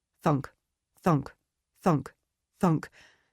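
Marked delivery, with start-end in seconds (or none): none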